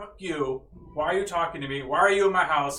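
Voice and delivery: attitude-filled cat character voice. In a Dungeons and Dragons game, the cat answers a player talking to it: cat with attitude. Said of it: "the cat has this attitude".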